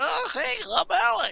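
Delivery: very high, very slow creaky voice. Retelling how a classmate did an impression of Alex. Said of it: "I know Pete had me".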